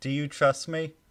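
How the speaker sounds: sudden, hurried, very loud, high shout. Narrating a scene, a character looks over to another and yells, yelling. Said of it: "and he yells real quick".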